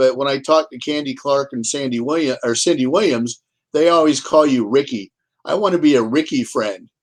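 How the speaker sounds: ordinary delivery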